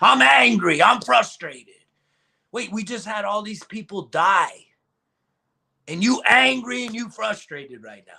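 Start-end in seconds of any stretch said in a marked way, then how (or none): 0.0-1.7 acted-out loud, rough drunk-sounding voice. Speaker mocks a city councilor's statement, imitating a drunk voice. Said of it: "you sounded like the drunk motherfucker".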